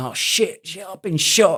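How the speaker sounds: put-on very high-pitched, drawn-out, girlish scream. Retelling how a soldier on a rooftop reacted when hit: imitating someone screaming. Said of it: "he started screaming like a girl".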